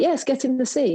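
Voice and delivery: put-on German-accented delivery. Speaker retells what a man said to them, imitating his German accent. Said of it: "like in a German accent".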